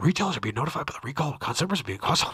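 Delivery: breakneck, rapid-fire, rattled-off very fast reading. Attempting a recall notice at top speed: reading very fast. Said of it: "can we go that fast".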